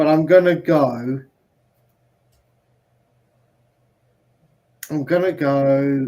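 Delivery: slow, drawn-out words through clenched, gritted teeth. Speaker describing his own reluctant decision, through gritted teeth. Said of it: "He says through gritted teeth".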